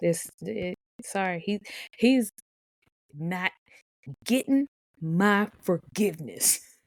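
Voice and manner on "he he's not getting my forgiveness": forceful, emphatic, said strongly from the chest. Refusing to forgive an anime character: said very strongly. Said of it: "That was very strongly said".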